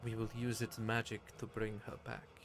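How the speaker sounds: gently, softly spoken, hushed voice. Voicing a character heard as the others look at him: speaking softly. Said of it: "you can hear him sort of softly say".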